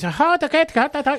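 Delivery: mock English accent. Mocking english actors heard doing interviews: mock english accent. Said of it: "half of Walking Dead cast is from fucking England".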